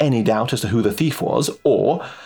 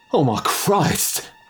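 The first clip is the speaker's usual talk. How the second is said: mumbled mutter, pitched up; 5 semitones higher than usual. As the others cry out one after another, Rudy speaks, muttered. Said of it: "muttered Rudy".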